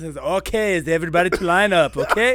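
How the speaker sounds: put-on accent of someone who learned English. Recalling how the speaker used to talk when teaching class: put-on learned accent. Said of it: "that's how I learned".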